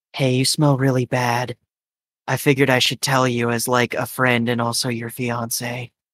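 whispered character voice. Voicing a character who hugs the player, then speaks in their ear: whispering. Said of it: "whispers in your ear".

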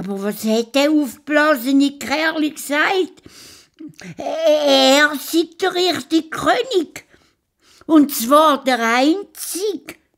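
very high, loud, sly little hare voice. A storyteller voices the hare reporting to his king: clever hare character voice. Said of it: "Der schlaue Has hat seinen Schnauz zwirbelt und ist fröhlich zu seiner Frau und zu seinen Kindern gekoppelt. / sein Schnauzbart zwirbelt und sich auf den Weg gemacht zu der Leuenhöhle. / Der Vater Has".

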